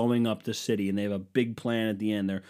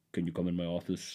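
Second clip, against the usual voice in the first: mock Russian-accented voice; 4 semitones lower, 7 dB quieter than usual. Imagining a leader calling someone into his office: imitating Putin. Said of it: "I just assume he sounds like this".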